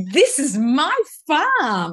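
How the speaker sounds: very slow, delighted, thrilled sing-song delivery. Retelling a woman's words as she arrived at her farm: imitating someone excited. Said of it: "she was so excited".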